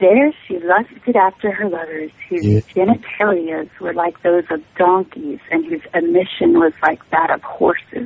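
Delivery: put-on seductive, sexy voice. Reading a bible verse aloud after being asked to read it sexy: put-on sexy voice.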